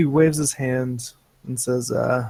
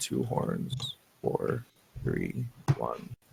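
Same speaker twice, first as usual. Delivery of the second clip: whispered mumble under the breath; 14 semitones lower, 9 dB quieter than usual. Narrating to players a character jotting notes, mumbling under his breath. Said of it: "you hear him like mumbling under his breath".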